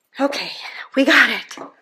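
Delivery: a little out of breath. Back from quickly grabbing wire from the gallery: out of breath. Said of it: "I'm just a little out of breath".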